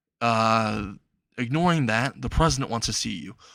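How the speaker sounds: plain reading voice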